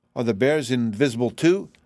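ordinary delivery

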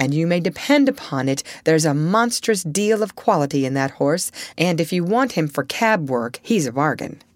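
ordinary delivery, nothing marked

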